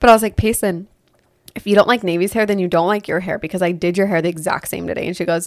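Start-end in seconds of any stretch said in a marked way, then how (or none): none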